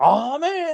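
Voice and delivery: mock dripping sarcasm, very high-pitched oh man. Retelling how another person reacted to new He-Man toys, mock-sarcastic oh man. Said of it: "the most sarcastic oh man you've ever heard".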